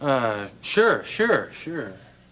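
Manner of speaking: grudging, very slow, unenthusiastic. Agreeing to offer a father a cup of coffee: unenthusiastic. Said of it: "don't sound so enthusiastic".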